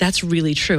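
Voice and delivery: ordinary delivery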